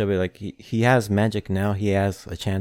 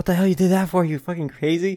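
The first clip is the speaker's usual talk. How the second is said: high, all-out, incredulous yelling; 9 semitones higher than usual. Recapping a fight scene, retelling Asta's yell. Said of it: "and Asta just yelling".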